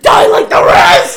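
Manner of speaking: very loud, full-throated, top-of-the-lungs scream. Describing a moment they loved, the speaker re-creates a top-of-lungs scream. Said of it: "I like screamed the at the rest. Top of the lungs".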